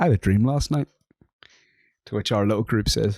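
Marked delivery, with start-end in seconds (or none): 0.0-0.9 proclaiming, announcement-style voice. Retelling a friend's line at college: imitating a listen-here-folks delivery. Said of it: "a listen here, folks kind of delivery".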